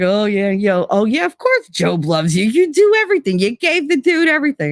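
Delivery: dripping, overdone sarcasm in a swooping put-on voice. Retelling the Job story, acting out the challenger to God: sarcastic put-on voice. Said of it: "all this sarcasm and everything".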